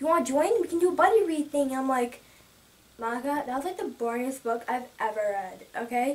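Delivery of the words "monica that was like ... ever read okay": over-it, thoroughly bored, unimpressed voice. Recalling answering a friend's book suggestion: retelling a bored voice. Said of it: "And I had that voice".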